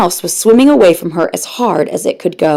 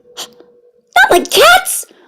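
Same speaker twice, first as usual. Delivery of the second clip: very high, shrill, impassioned squeaky mouse voice. Narrating the mouse's reply to Alice, shrill, passionate mouse voice. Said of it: "cried the mouse in a shrill, passionate voice".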